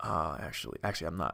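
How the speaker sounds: very low, smooth and soft voice. Speaker imagines how Brad Pitt would turn somebody down: smooth Brad Pitt impression. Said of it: "he'd be like super smooth".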